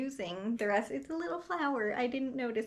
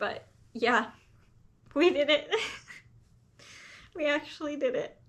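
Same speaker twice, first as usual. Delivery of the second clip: tearful crying with a breaking voice; 4 semitones higher than usual. Apologizing for crying again after finally succeeding, crying with voice breaking. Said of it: "I'm so sorry for crying again".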